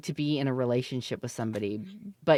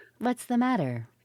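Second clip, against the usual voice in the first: pretend AI voice, higher; 9 semitones higher than usual. Joking with another speaker who is losing his voice: put-on AI wife voice. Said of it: "He hates that voice".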